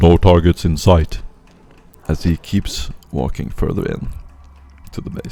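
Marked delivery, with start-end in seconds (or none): 0.0-1.2 mechanical, robotic voice. Voicing a mechanical soldier scouting the horizon: mechanical voice. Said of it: "you can hear this mechanical voice going".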